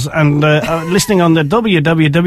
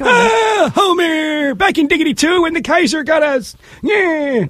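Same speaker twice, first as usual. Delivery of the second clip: put-on very high old cartoon grandpa voice; 11 semitones higher than usual. Showing off Simpsons impressions, doing a Grandpa Simpson voice. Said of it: "I can do grandpa".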